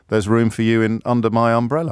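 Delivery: plain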